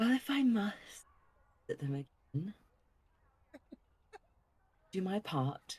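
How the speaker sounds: annoyed, irked sighing, completely deadpan. Voicing a character answering a companion's plan, the speaker delivers an irked sigh. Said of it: "With like a like irking sigh".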